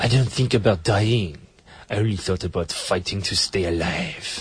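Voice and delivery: mock French-accented voice. Retelling what a crocodile attack survivor said: imitating a French accent. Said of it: "Great French accent, by the way".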